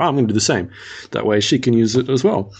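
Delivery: ordinary talk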